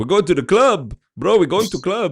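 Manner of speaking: put-on Middle Eastern accented speech. Pretending to be him in a 90s club bit, in a fob Middle Eastern guy voice. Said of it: "fob Middle Eastern guy energy".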